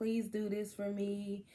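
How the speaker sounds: acted crying while pleading. Speaker recalling begging god in a closet before a loss: retelling a tearful plea. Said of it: "crying all the time and begging God".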